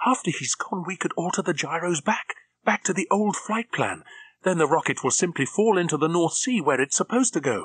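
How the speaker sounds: near-hysterical, high-pitched voice. Reading a woman pleading with a man, on the edge of hysteria. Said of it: "Her voice was on the edge of hysteria".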